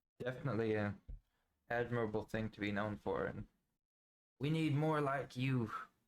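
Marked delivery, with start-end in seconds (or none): 3.3-5.7 folksy put-on old-timer voice. Interviewer praising a guest's answer about forgotten people, in an old timer voice. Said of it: "I felt like an old timer voice".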